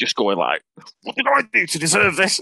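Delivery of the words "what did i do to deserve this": huffy, high-pitched voice. Retelling how a wrestler stormed off after a punch: Daffy Duck storming off in a huff. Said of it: "like Daffy Duck storming off in a huff".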